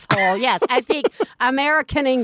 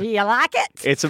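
amateurish, put-on Swedish accent; 2 semitones lower than usual. Speaker shows off their attempt at an accent to co-hosts, in a Swedish accent. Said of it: "This is my Swedish accent".

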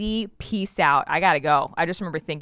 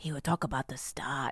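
hushed, whispered, terrible fake Austrian accent; 3 semitones lower, 11 dB quieter than usual. Imitating a college astronomy teacher, bad Austrian accent. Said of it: "This is a terrible accent".

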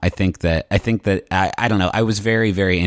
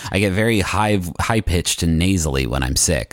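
ordinary delivery

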